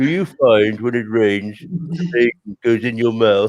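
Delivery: voice of a talking tortoise. Telling a joke about two tortoises in a rainstorm, a speaker does the tortoise voice. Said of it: "This is like how you were speaking".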